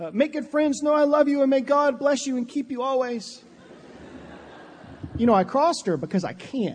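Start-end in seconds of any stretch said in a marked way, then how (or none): 0.1-3.4 choked-up, constricted throat, higher pitch, holding back tears. Retelling a goodbye to a daughter at her dorm: imitating a choked-up voice. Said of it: "sounded something like this".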